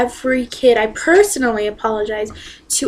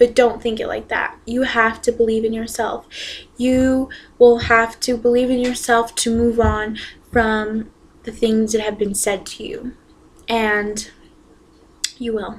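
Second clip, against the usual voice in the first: voice close to crying, choking up. Speaker ending a video with encouragement for viewers, choking up, near tears. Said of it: "I'm sorry for almost crying".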